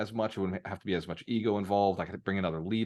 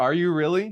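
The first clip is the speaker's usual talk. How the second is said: doubtful, incredulous tone of complete disbelief; 10 semitones higher, 8 dB louder than usual. Retelling how she questioned a big goal: imitating someone's disbelief. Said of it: "in complete disbelief".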